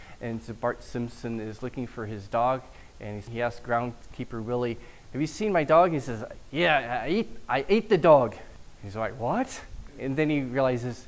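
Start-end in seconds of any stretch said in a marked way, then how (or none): 6.5-8.3 put-on slow drawn-out Scottish accent, h dropped from hate. Retelling a Simpsons scene where Bart asks about his dog, Groundskeeper Willie Scottish accent. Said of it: "who's Scottish".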